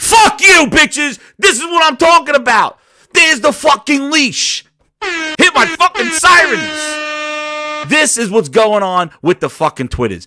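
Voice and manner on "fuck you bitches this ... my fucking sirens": full-on, high, raw screaming rant. Speaker on the mic stops watching what he says: screaming into the mic. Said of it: "Sorry for screaming in the mic".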